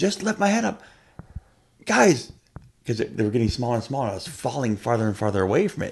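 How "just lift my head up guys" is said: very high, desperate, panicked scream. Speaker retells a dream of falling away from people, reenacting a scream. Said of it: "And I started screaming".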